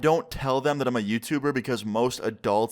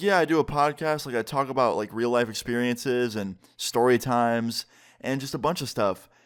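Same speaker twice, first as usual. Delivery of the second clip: ordinary delivery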